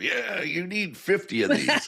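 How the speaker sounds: very high-pitched, pushy, hard-sell salesman voice. Mocking a pushy pitch while explaining soft selling: mock hard-sell pitch. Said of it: "You're not going in for the hard sell".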